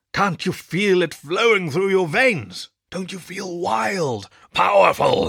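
gruff growling. Narrator voices the elder addressing a classroom: growling. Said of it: "he growled".

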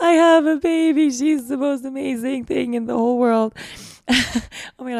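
speaking through tears. Recalling a driver's question about children, crying while speaking. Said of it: "I'm crying right now just saying it".

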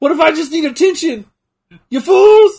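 loud, shrill, very high-pitched outcry. Retelling a comedy sketch's ending: Mr. T impression. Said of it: "Key and Peele sketch of Mister T".

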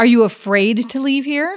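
irritated, annoyed tone. Tira steps forward to question someone about leaving, irritated. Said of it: "she's getting irritated".

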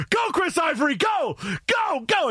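put-on very high, very slow, drawn-out screaming cheer. Retelling cheering a player's run toward a touchdown, retelling his own screaming. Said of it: "And I'm screaming".

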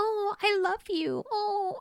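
put-on very high, slow, creepy anime little girl voice. Quoting what a woman said; creepy little girl voice. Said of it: "she had this little girl voice".

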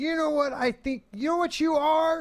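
very high, loud, in-your-face barking yell. Retelling a coach yelling at a running back: imitating Bill Parcells yelling. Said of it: "he was yelling at guys".

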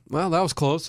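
ordinary delivery

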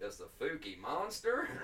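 laid-on American southern drawl. Reading out a monster's name on request: southern US accent. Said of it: "trying to go for the southern".

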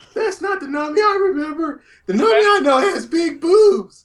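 very high, loud, nerdy geek fanboy voice. Complaining to friends about a Nami from One Piece, in a geek fanboy voice. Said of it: "Why are you talking in that tone?".

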